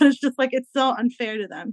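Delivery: earnest, heartfelt, with feelings rising. Giving final thoughts on sending kids to camp, getting emotional. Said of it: "I don't wanna get emotional, sorry".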